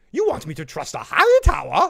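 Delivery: very loud, swooping, puppet-like character voice. Quoting how she said a line today, in a Muppet-like voice. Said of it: "Totally sounded Muppet like".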